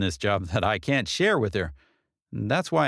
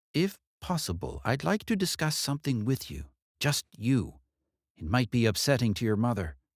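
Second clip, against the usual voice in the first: private, hushed, confidential murmur; 3 semitones higher, 3 dB quieter than usual. Narrator reads a detective leaning toward Katie to speak privately, in a hushed voice. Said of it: "In a hushed voice".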